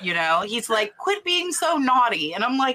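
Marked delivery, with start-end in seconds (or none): 1.0-2.3 put-on small, high-pitched English child's accent. Quoting a kid who talks like a little english kid: little english kid accent. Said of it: "he talks like Lovey. a little english kid".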